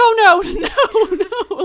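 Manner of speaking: loud, very slow, stretched-out panicking. Retelling what a man on the ride said: imitating someone panicking. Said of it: "he was kinda panicking".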